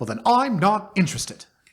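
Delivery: put-on British voice. Quoting people who throw papers down, in a put-on British accent. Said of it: "I think I did a British voice there".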